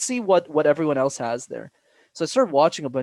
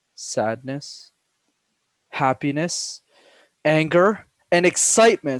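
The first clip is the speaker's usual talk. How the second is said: tone shifting to a new emotion on every word; 4 dB louder than usual. Showing listeners what vocal tone variation sounds like, shifting emotional tones. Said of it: "vocal tone variation sounds something like this".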